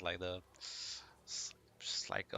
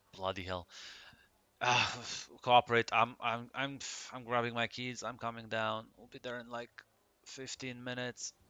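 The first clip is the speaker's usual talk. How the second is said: fed-up, put-upon, irritated, annoyed voice; 2 semitones higher than usual. Voicing a bar owner getting up after bad news: annoyed voice. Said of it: "the annoyance in his voice".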